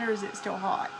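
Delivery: plain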